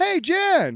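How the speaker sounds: put-on very high, youthful, kid-like voice. Showing how the comic version of the character sounds: younger-sounding voice. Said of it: "that's younger".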